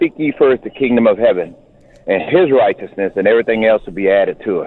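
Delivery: ordinary delivery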